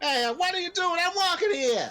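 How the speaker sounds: very high, put-on New York accent. Joking about accents with friends, the speaker switches to a new york accent. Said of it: "New York accent".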